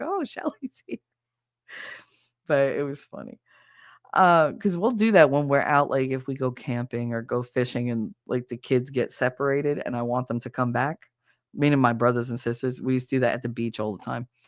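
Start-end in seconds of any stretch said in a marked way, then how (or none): 0.0-1.0 high, soft excited dog voice. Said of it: "the dog got all excited and was like".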